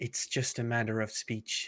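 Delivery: soft, hushed whisper in character voice. Voicing a character who answers a question, whispering in character.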